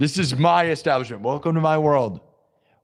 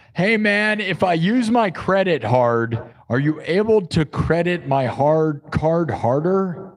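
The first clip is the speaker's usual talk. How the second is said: usual speaking voice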